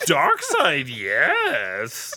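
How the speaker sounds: animated, swooping sing-song voice, pitch all over. Riffing on a movie scene with friends: Yoda impression. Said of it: "Your Yoda impression gets better".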